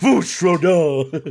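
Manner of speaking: loud put-on dragon shout. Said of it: "Just a bit louder".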